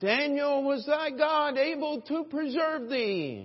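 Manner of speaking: put-on anguished lament, very high and loud. Retelling how the king called into the lions' den next morning, acting out his lament. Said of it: "in a lamentable voice".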